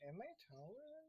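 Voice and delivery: high, very quiet mutter under the breath. Voicing a character's reply, muttered under his breath. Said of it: "he does say that under his breath".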